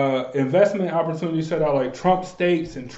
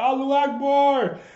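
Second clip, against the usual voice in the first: acted-out yell in a much higher voice; 9 semitones higher than usual. Speaker retells someone yelling out during an onstage speech: retelling a yell. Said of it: "Somebody just yelled out".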